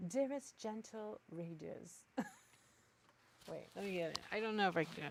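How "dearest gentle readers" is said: attempted British accent, higher pitch and slower pace. Asked to read it aloud, the speaker tries it in a British accent. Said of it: "read it with a British accent".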